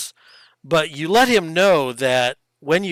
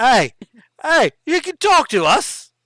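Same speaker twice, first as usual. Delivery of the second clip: very bad, high-pitched put-on Cockney accent; 8 semitones higher than usual. Voicing a talking fish, speaking to the others, in a terrible cockney accent. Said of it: "worst Cockney accent I've ever heard".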